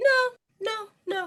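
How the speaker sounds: voice shooting up very high. Denying she's judging, in a high-pitched voice. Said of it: "that high pitched voice again".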